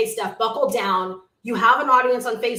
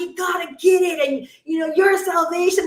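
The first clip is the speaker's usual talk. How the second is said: play-acted, high, urgent, earnest pleading; 6 semitones higher than usual. Imitating how the apostles always plead about salvation: imitating Paul and Peter pleading. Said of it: "they're always pleading".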